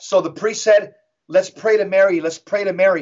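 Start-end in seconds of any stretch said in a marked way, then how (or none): none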